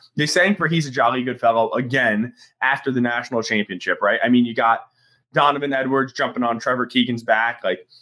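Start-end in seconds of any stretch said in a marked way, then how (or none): none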